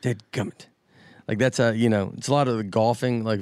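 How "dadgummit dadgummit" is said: frustrated mutter, quieter. Showing how the favorite word is typically said: muttered in frustration. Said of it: "intone your voice how you would typically use it".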